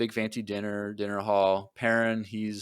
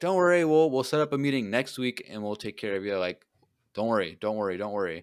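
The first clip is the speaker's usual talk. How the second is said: ordinary talk, nothing marked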